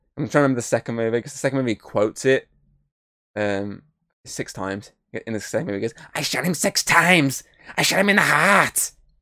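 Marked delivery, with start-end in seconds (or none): 6.2-8.9 put-on slow delivery with slight Scouse accent creeping in. Retelling a movie character's line, imitating Loomis with a bit of a Scouse accent. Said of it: "a bit of a scouse into the back of it".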